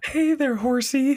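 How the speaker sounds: pitched way up, squeaky. Quoting a TV scene where Leslie plays Tammy: Tammy voice. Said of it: "her impression of Tammy was spot on".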